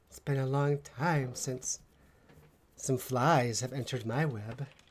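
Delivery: amused feminine voice with a chuckle. A game master voices a hidden speaker to the players, in a chuckling feminine voice. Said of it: "this feminine voice that just chuckles".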